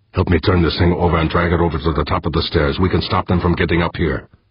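ordinary delivery, nothing marked

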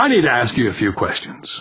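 ordinary talk

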